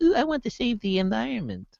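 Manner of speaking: vain starlet gush, very high, soft and cooing. Discussing Teslas as status symbols, the speaker does a mock Hollywood starlet voice. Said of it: "That was a good voice".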